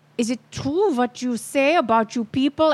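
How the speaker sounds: put-on German accent in English. Retelling a scene, quoting a woman after she blows out candles, german accent. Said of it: "she says in her German accent".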